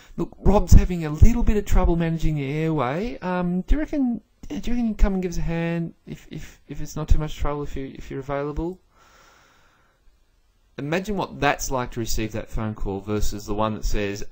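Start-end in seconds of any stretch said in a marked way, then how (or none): 0.2-8.8 put-on worried, nervous voice, higher pitch. Acting out a junior person phoning the big scary boss: imitating a worried junior. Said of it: "very worried about ringing the big scary boss".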